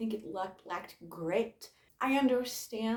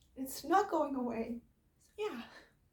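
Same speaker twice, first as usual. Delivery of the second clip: high-pitched, tearful voice, crying through the words; 6 semitones higher than usual. Reviewing a book about grief on camera, speaker starts crying. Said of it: "I'm crying on camera".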